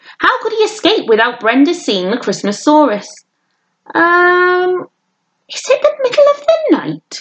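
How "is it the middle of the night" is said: high, slow fake shock with a long um. Narrating William, stopped by Brenda in the street at night, in a fake shocked voice. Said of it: "in his best fake shocked voice".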